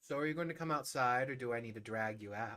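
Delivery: put-on talking while laughing. Retelling how he spoke to Val, imitating him laughing while talking. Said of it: "He started laughing and he looked at Val and said".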